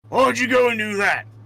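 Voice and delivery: loud, high-pitched yelling. Voicing a silhouetted figure who looks down and shouts at the players: shouting out. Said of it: "shout out".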